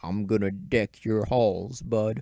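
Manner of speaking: deep, low, rumbling bass voice. Reading a story aloud, a character speaks to Howard in a deep bass rumble. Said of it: "rumbled in a deep bass voice".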